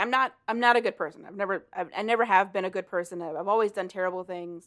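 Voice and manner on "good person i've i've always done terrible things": ordinary talk, nothing marked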